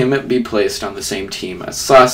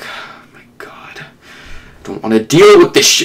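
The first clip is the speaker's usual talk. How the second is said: irritated, pissed-off, fed-up outburst. Acting out Naruto overhearing Sakura: pissed-off Naruto voice. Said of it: "Naruto is really pissed at this".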